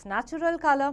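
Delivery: ordinary delivery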